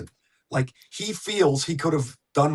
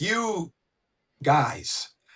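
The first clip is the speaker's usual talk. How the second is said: yelling, pitched higher; 3 semitones higher than usual. Retelling how Paul Maurice yelled at his bench: imitating Paul Maurice yelling. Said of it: "he's yelling at his bench".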